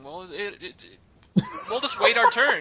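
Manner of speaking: very loud, swooping put-on Irish accent. Acting out a third-class passenger waiting for a lifeboat: put-on irish accent. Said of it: "What kind of Irish accent was that?".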